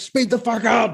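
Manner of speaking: mock, very high, shrill, pointless screaming. Retelling honking behind a student driver: imitating own screaming. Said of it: "honking and screaming for no reason".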